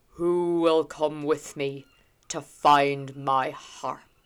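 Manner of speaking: deep, low, loud, drawn-out bellow. Reading the story aloud, as the Dagda stands up to speak: the Dagda's low, deep, bellowing voice. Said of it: "in a low, deep, bellowing voice says".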